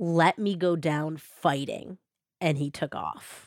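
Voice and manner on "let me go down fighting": mock low growling. Retelling what a man said to a woman before he took off, in a low growl. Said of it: "in a low growl".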